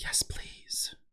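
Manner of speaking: creepy whispered mutter under the breath. Retelling what a contestant mutters on getting a rose: imitating a creepy muttered aside. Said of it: "says the creepiest under his breath".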